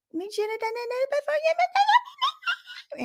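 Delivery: put-on bitchy tone, very high and very slow. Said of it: "put it in a little bitchy voice".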